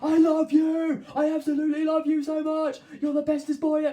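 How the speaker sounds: shrill, very loud, high-pitched shouting at full volume. Explaining how animals pick up on tone, the speaker demonstrates shouting. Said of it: "if you shout something like".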